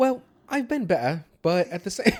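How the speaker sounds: put-on British accent. Answering a partner in a role-played chat, in a British accent. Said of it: "let me do brace action real quick".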